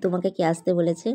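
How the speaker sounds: ordinary talk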